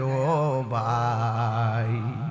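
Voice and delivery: low, very slow wailing lament.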